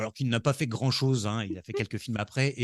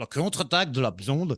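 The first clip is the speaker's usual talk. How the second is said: clumsy, bad attempt at a Quebec accent; 2 semitones higher than usual. Trying to give the French title of a Reese film sequel: bad Quebec accent. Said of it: "je n'ai jamais su faire l'accent québécois".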